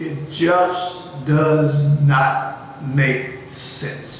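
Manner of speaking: very slow, deliberate, carefully spelled-out delivery. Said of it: "see how slow and deliberate I'm talking".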